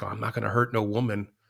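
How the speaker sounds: close, menacing, threatening half-whisper. Retelling a film scene where a character threatens someone: imitating a menacing half-whisper. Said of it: "whispering in his ear".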